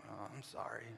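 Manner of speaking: soft, begrudging, unwilling tone. A parent describes a child told to apologize, giving a mock-begrudging apology. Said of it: "and they begrudgingly".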